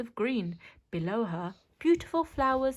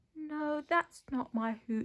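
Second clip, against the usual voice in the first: very quiet, hushed, barely audible voice; 4 semitones higher, 4 dB quieter than usual. Narrator reads the owl Ula's reply to the frog, very quiet voice. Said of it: "her voice so quiet that the frog could barely hear her".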